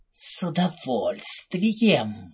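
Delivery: breathy, whispered hiss in an evil fairy voice. The narrator voices the evil fairy answering the prince: hissing. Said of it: "прошипела злая фея".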